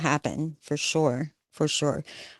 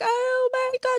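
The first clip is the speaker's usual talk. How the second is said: high-pitched sobbing cry. Retelling a daughter's panicked phone call: imitating someone sobbing. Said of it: "she was sobbing".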